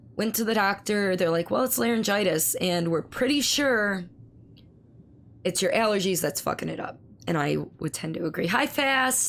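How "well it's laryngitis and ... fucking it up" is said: ordinary talk, nothing marked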